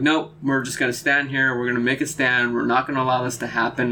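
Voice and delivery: ordinary talk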